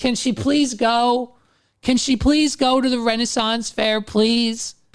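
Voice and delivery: imploring, repeated begging, pleading. Retelling begging a judge to let someone attend: retelling own begging. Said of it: "it sounded just like this".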